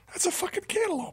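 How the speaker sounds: high, incredulous outburst.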